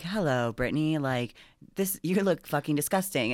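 put-on girl robot voice. Retelling a TV show where a girl robot scans someone: girl robot voice. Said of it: "a girl robot".

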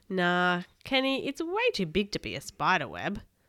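plain reading voice

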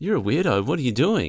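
put-on American accent, blunt, high and loud. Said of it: "She's American".

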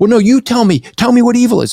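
very high, stuttering, stammering voice tripping over words. Retelling how a heckler answered a question: imitating someone stuttering. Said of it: "he was stuttering".

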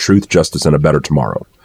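ordinary talk

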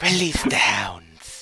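airy, breathy voice, words breathed out. Trying a voice after being told it sounds like Mister Burns. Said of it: "gives me big Mister Burns vibes".

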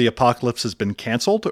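normal talking voice

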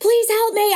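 put-on, very high, shrieking drunken yell. Retelling asking the hotel concierge for help: imitating her own drunk yelling. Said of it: "I'm, like, yelling".

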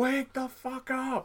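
very high, very slow, drawn-out shout. Retelling trying to wake a sleeping passenger: imitating someone yelling. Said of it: "I was yelling at this guy".

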